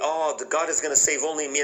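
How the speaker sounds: normal talking voice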